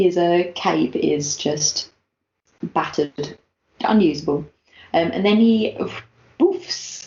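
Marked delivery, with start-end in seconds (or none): 6.4-7.1 high, whispered "boof" sound effect. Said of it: "that's the sound effect".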